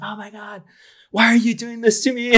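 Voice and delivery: very high, very loud, shrill freak-out scream. Retelling what a nurse screamed after a fall: imitating someone screaming.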